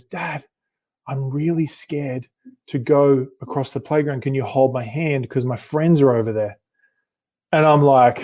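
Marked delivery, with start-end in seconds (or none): 0.0-6.6 hushed, close half-whisper. Retelling how a daughter half-whispered a request: imitating George half-whispering. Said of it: "she whispers in my ear and she says".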